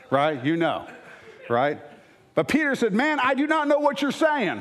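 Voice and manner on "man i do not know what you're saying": light put-on southern accent, very high pitched. The speaker voices Peter's reply to an accuser, with a slight southern accent. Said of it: "I put a little southern on there".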